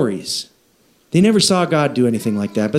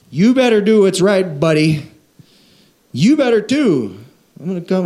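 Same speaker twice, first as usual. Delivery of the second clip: put-on Southern American accent throughout; 4 semitones higher than usual. Describing forced morality with a quoted voice: Southern accent. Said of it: "I don't know why the Southern accent on that".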